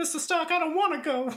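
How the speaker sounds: put-on very high young child voice. Redoing the line after being told the accent was odd, young Peter Parker voice. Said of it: "But like a kid".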